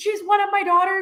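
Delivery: high, proud screaming. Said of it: "And he's, like, screaming".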